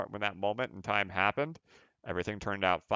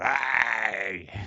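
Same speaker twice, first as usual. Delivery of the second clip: put-on haggly old lady voice, drawn-out hey. Quoting the speaker's wife, in a haggly old lady voice. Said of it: "I just made her sound like a haggly old lady".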